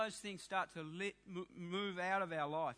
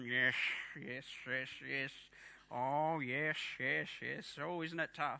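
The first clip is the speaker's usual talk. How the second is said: slow, low, forced delivery through clenched teeth; 5 semitones lower than usual. Acting out answering a phone caller, imitating speaking through gritted teeth. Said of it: "through gritted teeth on the phone you're going".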